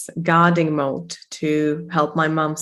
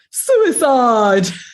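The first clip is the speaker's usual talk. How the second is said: mock dramatic telenovela-style scream, higher and louder; 6 semitones higher, 6 dB louder than usual. Retelling what a dramatic neighbor shouted: imitating a neighbor screaming, telenovela-style. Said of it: "She would go screaming, like, in some kind of really silly telenovela".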